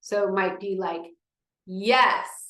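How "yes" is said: strong, loud, projected, raised speaking voice. Showing how to say a practice word: loud voice. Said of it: "it's gonna be a little louder than what you're used to".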